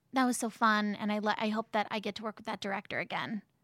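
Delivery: plain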